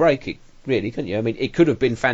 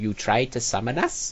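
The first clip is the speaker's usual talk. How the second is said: put-on witchy voice, quieter; 3 dB quieter than usual. Mocking a voice actor's first line in a movie: imitating a witch-like voice. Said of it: "Sounds like the witch from The Wizard of Oz".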